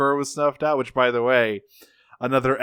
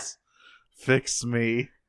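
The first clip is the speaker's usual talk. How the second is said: mock-dramatic pleading, quieter; 4 dB quieter than usual. Recounting an episode, the speaker acts out a character's mock-dramatic pleading. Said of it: "very dramatically asks Wheeljack to fix him".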